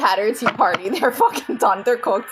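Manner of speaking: ordinary delivery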